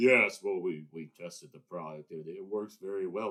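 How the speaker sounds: loud fake baritone, pushed down into bass. Imitating Elizabeth Holmes presenting a product: imitating Elizabeth Holmes's fake baritone voice. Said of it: "with that fake baritone voice".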